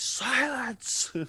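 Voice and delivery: amplified boom, very loud and very high pitched. Player character casting a spell to amplify the voice, booming Dumbledore silence. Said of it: "cast thaumaturgy on myself to make my voice boom three times louder".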